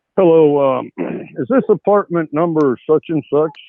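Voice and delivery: formal, genuinely official-sounding voice. A college guy phoning a girl's apartment as a prank, in an official voice. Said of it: "talking a real official voice".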